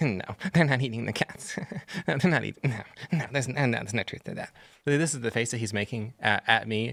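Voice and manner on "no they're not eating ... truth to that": smug, condescending, smarmy, sassy, dismissive tone. Retelling what a reporter from Politico said: imitating a smarmy, sassy reporter. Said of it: ""I'm going to do an impression."".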